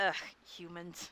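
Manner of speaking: muttered under the breath. As Mo, the character asked what he just said, muttering under breath. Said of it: "He's like saying under his breath".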